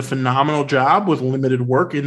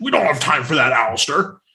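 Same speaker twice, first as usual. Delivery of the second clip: put-on growled shout. Recounting a film scene, imitating Dumbledore's shout-growl. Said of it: "kind of like shout growls".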